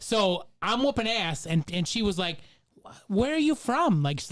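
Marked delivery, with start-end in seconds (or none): 3.1-4.0 put-on very high, sweet, cute girlish voice. Retelling how a girl asked where he was from online: imitating a cute goth girl voice. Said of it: "she just had this cute goth girl voice".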